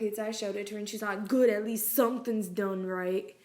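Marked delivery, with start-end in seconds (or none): 1.3-3.2 sassy, snippy tone full of attitude. Retelling what a rude customer said: imitating someone with an attitude. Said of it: "getting an attitude".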